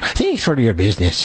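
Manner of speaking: clumsy, bad, put-on Irish accent. Speaker asked to do their best Irish accent for listeners, bad Irish accent. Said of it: "Let me hear your best Irish accent".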